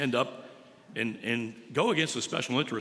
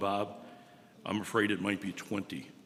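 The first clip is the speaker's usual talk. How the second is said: lower, quieter, emotional voice; 4 semitones lower, 4 dB quieter than usual. Retelling a caller's answer on the phone: imitating someone speaking quietly, emotional. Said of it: "he quietly said into the phone".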